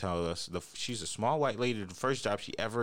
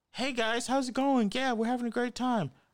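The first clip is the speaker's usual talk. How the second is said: full-on, very high-pitched put-on girly voice; 3 dB louder than usual.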